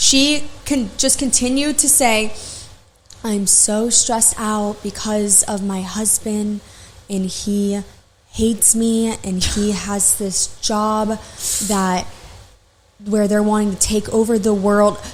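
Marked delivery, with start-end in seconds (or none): 3.2-15.0 put-on slow baby-voiced rambling, every word drawn out. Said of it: "talking really slow".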